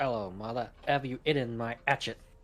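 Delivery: attempted, put-on Cockney accent. Joking about how the british say herbs, the speaker tries an attempted cockney accent. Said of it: "Wiley attempting to be Cockney".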